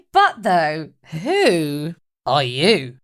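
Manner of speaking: slow, slightly flirty delivery. Voicing a character named Mum greeting a stranger: flirty in character. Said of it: "Rock slash Mum says with a bit of a, like, flirt".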